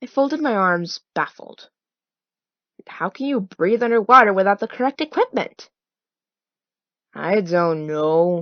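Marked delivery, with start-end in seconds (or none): 7.1-8.4 bored, uninterested, can't-be-bothered tone. Narrator reads Zack's reply to the narrator's baffled question, in a bored voice. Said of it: "said Zack in a bored voice".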